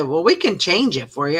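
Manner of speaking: normal talking voice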